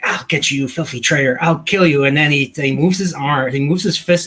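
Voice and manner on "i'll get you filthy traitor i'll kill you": put-on, feigned crazed madman voice, menacing. Describing an episode where Kirk pretends to be crazy: imitating Kirk's crazed threat. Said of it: "just Kirk pretending he's crazy".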